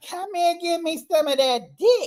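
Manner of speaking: put-on very high, dirty, lecherous little old lady voice. The speaker imagines herself as a little old lady later in life; dirty little old lady voice. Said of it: "the little old lady that's being the dirty".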